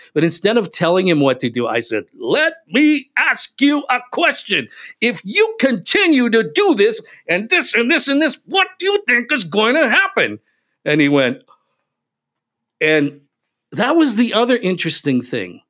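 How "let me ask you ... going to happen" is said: exasperated, very high, pitched-up yell. Retelling the question the speaker yelled at him; retelling a yell. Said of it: "I literally yelled at him".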